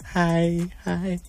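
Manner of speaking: hushed, creepy, lurking stalker voice. Radio host signing off the show, greeting in a stalker-like voice. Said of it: "Why do you sound like a stalker?".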